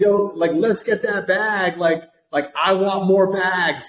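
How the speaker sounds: acted-out shrill, very high, loud, drawn-out scream. Retelling a mom's message in the family group chat: imitating mom screaming. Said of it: "my mom's, like, screaming".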